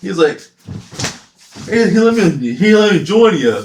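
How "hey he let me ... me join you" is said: loud, high, giggling laughing chatter.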